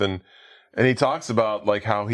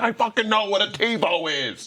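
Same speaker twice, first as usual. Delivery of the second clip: play-acted fed-up angry shout, pitched very high; 11 semitones higher than usual. Retelling a movie character's outburst during an argument: imitating someone yelling. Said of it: "they have a big argument over a TiVo".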